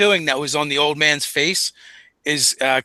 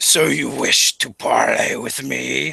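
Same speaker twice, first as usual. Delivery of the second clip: low, deep, rough, gravelly tusked monster voice. Narrator voices a tusked creature speaking to the listeners, in deep gravelly voice. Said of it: "in a d- deep gravelly voice".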